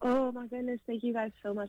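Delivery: voice fighting to hold back tears. Receiving a surprise Mother's Day gift and thanking the givers, holding back tears. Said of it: "I'm trying not to cry right now".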